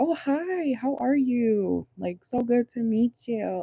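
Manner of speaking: high, overly nice fake friendliness. Imagining a woman meeting her kid's father's girlfriend, mock fake-nice greeting. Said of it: "Like the fake nice".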